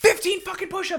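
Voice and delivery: high, loud screaming voice. Retelling ordering a man to do push-ups, retelling screaming at him. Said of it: "I start screaming".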